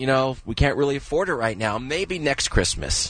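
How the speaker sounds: ordinary talk, nothing marked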